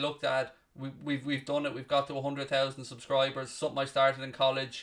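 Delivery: ordinary talk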